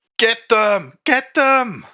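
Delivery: very high-pitched yelling. A woman inside a window that just opened calls out, yelling out. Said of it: "the woman inside yell out".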